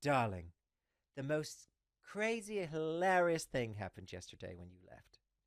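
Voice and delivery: very loud, booming, bad British accent. Retelling what Elena said the next day, in a terrible British accent. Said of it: "Insert terrible British accent".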